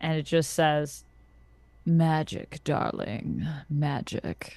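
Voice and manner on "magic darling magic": grim, dark, grisly, eerie, unsettling voice. Narrating a scene, voicing someone speaking from behind you: dark, grisly, unsettling voice. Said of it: "It's dark and grisly and all kinds of unsettling".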